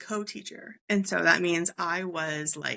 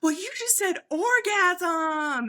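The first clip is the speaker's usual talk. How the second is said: high, giggling words, one word drawn out; 12 semitones higher, 4 dB louder than usual. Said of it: "She's laughing".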